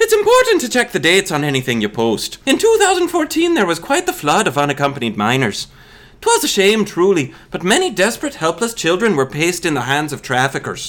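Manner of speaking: put-on very low, sing-song, swooping Irish accent. Speaker who says they can kind of do irish, delivering lines in an irish accent. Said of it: "I can kind of do Irish".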